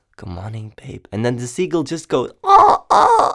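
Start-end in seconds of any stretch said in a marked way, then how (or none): 0.2-1.1 soft, low, hushed half-whisper under the breath. Retelling trying to record a morning greeting near the ocean, re-enacting a half-whisper. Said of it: "I'm like whispering like".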